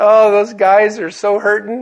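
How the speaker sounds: mock giggling while talking. Retelling how a man reacted after reading the sprinkler head, imitating someone giggling. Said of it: "he kind of starts giggling like this".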